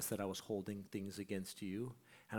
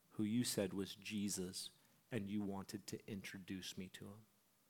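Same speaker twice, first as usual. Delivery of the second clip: put-on tearful crying voice, quieter; 4 dB quieter than usual. Speaker quotes a woman on the phone telling her dream, retelling her tearful words. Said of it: "Through her tears".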